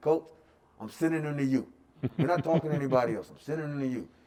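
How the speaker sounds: heavy, strong put-on Nigerian accent. Coach retelling a recruit's father calling him back, in a strong Nigerian accent. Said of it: "very strong Nigerian accent".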